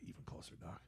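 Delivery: breathy whisper, close and intimate. Retelling a movie scene, quoting Adrian pulling Rocky closer: imitating Adrian. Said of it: "She's like".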